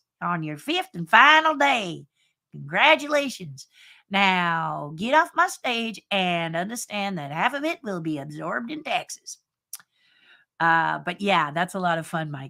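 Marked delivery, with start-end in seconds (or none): 0.2-9.4 put-on screaming country accent, higher and louder. Imitating a game show host telling the returning champion what they won, in her country screaming voice. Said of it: "in her country screaming voice".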